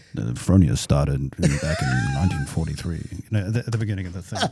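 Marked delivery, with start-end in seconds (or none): 0.3-3.1 very loud, booming, swooping radio announcer voice. Speaker recalls the company history line they used to say, radio announcer voice. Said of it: "That was your radio voice".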